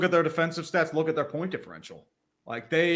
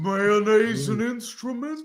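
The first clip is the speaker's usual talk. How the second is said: put-on kids' cartoon character voice; 4 semitones higher than usual. Answering what the character sounds like: Patrick Star voice. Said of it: "What does he sound like?".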